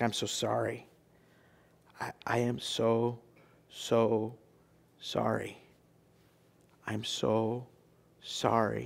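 soft, very slow, weeping, sobbing voice. Retelling a son collapsing on his dad's chest, imitating a sobbing apology. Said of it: "sobs, weeping".

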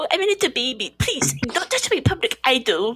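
put-on high whiny German accent. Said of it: "it was my German one".

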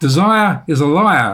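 bad, rough, slow put-on Australian accent. Quoting an Australian man's saying, in a bad Australian accent. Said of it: "Forgive my bad Australian accent".

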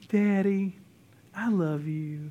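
put-on sugary, doting, very sweet little voice. Retelling a teenage daughter speaking to her dad, imitating sweetest voice ever. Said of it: "in just the sweetest voice ever".

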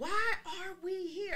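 play-acted, very high, stretched-out shouting. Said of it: "I kept yelling".

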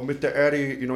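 loud speech in a deaf man's manner. Telling about a deaf man people talked about, imitating Mr. Eddie's speech. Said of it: "he would speak like this very much".

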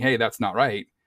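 ordinary talk

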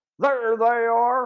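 sudden, loud shouted call. Fritz Stark spots the hidden boys from the pursuing boat, shouted. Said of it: "Fritz Stark shouted".

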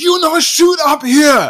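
very high, very loud, shrill, angry yelling outburst. Retelling the ramen master's reaction to an injection: imitating someone flipping out. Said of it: "flips out".

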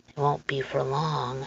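quiet voice. A man with something moving under his overcoat speaks softly to Lenora. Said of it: "the man said softly".

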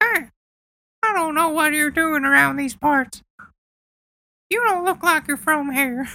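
very high-pitched, squeaky cartoon voice. In a comedy bit, a character questions a stranger, racist Mickey Mouse voice. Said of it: "just racist Mickey Mouse".

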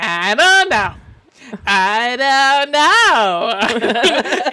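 loud, very slow, nasal voice, drawn out. Retelling a comedy sketch's deposition reading: imitating Richard Kind's nasal voice. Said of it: "he's got a very nasally voice".

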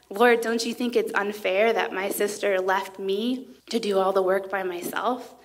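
usual speaking voice

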